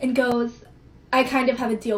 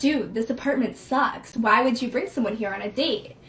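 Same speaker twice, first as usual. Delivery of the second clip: dry, flat, expressionless deadpan delivery. Retelling a guest who walks in and turns to him, retelling a deadpan remark. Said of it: "turns to me, deadpan, says".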